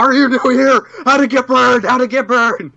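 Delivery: furious. Acting out a character's question after calling it furious: asking furiously. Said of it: "More like she asked furiously".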